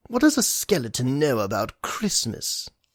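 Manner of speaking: scornful, sneering voice with swooping pitch. Reading a story aloud, the narrator gives the doctor's reply to the skeleton; sneering. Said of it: ""I'm not a total curmudgeon," Doctor Holloway said between bites. / He lifted the fork and took a bite".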